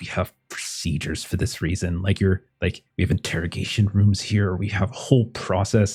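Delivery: quiet, angry muttering under the breath. Voicing a character who is angry at losing a suspect: muttering angrily under breath. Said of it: "mutter under his breath".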